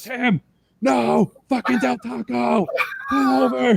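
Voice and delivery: mock very high, very slow, drawn-out, top-of-lungs scream. Retelling being yelled at from the back of the van: imitating someone screaming. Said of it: "screaming at the top of your lungs".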